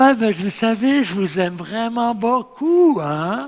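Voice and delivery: honeyed, syrupy, insincere fake-sweet tone. Speaker showing how a declaration of love can sound: syrupy, fake-sounding. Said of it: "c'est un peu mielleux, ça sonne feu".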